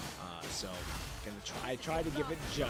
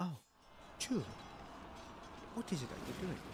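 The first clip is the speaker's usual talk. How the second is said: put-on light British accent, a little bit, soft and high; 6 semitones higher, 5 dB quieter than usual. Mimic how she sounded to you when speaking to Chu, in a slightly British accent. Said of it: "She sounded a little bit British".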